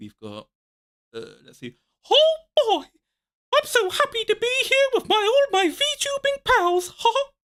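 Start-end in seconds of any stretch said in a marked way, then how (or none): 2.1-7.2 cartoon voice, pitched way up, stretched. Doing impressions on stream, starting with Mickey Mouse voice. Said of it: "So, uh, Mickey".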